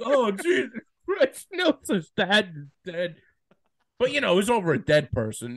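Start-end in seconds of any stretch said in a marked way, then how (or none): 0.0-3.2 put-on, high, drawn-out sobbing cry-talk. Retelling watching a cast member's dad die on tv: retelling own crying. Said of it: "And I'm crying. I'm like".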